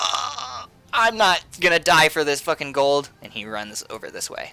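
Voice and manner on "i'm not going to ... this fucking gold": wounded, injured thug character voice. Voicing a wounded thug who gives up the chase: voicing a wounded thug. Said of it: "this guy who got, uh, cleft is just like".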